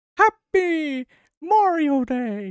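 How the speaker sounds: high squeaky cartoon voice. Wishing everyone a happy Mario Day, in a Mickey Mouse-like voice. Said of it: "that sounded like Mickey Mouse".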